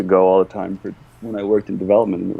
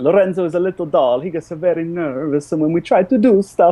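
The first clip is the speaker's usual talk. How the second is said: high put-on Italian accent; 9 semitones higher than usual. Answering a question about the doll, describing it, Italian accent. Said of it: "I'm Italian. I'm allowed to use this accent".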